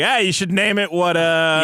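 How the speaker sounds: ordinary talk, nothing marked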